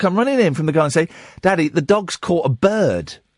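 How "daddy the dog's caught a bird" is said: ordinary talk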